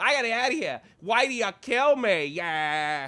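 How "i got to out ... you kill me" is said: put-on phony Boston accent, very high, loud, shrill. Mocking Leonardo DiCaprio's airport scene in The Departed for a fellow speaker, Leonardo DiCaprio's phony Boston accent. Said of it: "phony fucking Boston accent".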